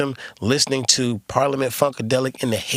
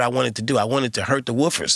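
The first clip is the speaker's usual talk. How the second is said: plain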